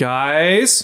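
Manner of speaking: drawn-out calling voice. Calling the others outside after being asked for a yell: yelling for the others as Boral. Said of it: "Give us a yell".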